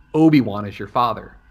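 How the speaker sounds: ordinary talk, nothing marked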